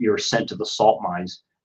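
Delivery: ordinary delivery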